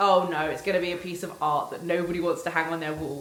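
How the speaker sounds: normal talking voice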